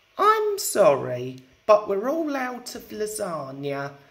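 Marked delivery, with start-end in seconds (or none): none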